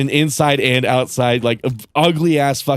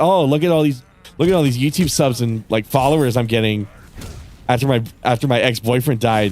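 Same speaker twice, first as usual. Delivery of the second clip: plain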